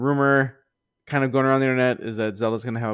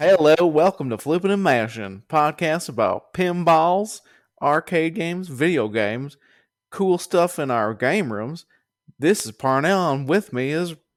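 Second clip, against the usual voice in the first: goofy fake intro-style voice, pitched high; 5 semitones higher, 3 dB louder than usual. Podcast host opening the show's intro, in a silly put-on voice. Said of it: "Sorry that I was just doing a voice".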